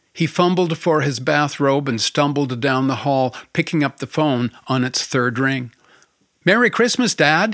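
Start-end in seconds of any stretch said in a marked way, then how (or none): 6.5-7.6 happy, gleeful, high-pitched. Narrator reading a story, a daughter greets her father by phone; gleeful. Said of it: "came the gleeful greeting".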